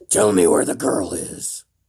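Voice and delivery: loud, booming, deep and serious voice. Trading serious voices with Deva, speaking in a Batman voice. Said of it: "This is my serious voice".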